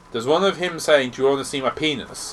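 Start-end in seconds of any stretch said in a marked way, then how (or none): none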